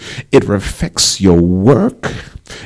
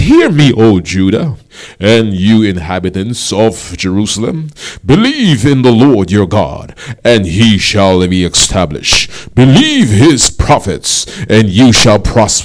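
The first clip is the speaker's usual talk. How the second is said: loud, booming radio voice. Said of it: "I had to put on my radio voice".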